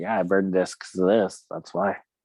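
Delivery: plain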